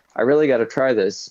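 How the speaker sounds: ordinary delivery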